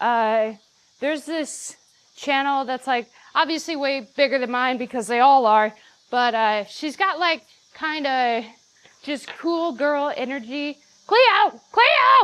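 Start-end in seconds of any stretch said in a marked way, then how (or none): 11.1-12.2 high, ear-splitting, very loud, shrill yell. Speaker calls out a name right by the listener's ear, yelling a name. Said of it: "I didn't mean to yell in your ear".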